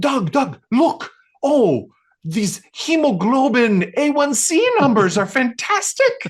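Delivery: very high, very loud, thrilled, delighted gushing. Retelling a man reading lab results aloud to the speaker, imitating delighted excitement. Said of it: "his face lights up like he just won the lotto".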